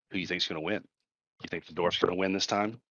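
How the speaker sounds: fast, secretive, surreptitious half-whisper. Playing their character, turning to Idvar to ask him privately, in a surreptitious half-whisper. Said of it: "whisper kind of surreptitiously to him".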